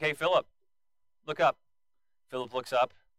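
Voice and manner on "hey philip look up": sly, smirking, knowing voice. Retelling how Jesus leans over to ask Philip: smirking Jesus. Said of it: "Jesus has got a smirk on his face".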